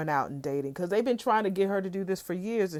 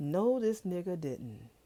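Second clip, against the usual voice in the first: quieter mumbling under breath; 5 dB quieter than usual. Retelling what someone said quietly to herself: muttering under breath. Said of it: "said it under her voice, her, her breath".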